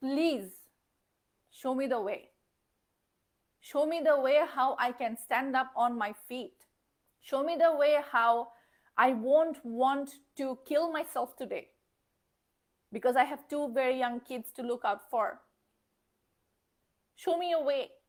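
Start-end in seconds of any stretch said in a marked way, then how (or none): none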